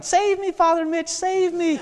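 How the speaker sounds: put-on very high little boy's voice, hollering. Retelling a little boy's cries while his dad tackles him: imitating a child hollering. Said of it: "he'd start hollering".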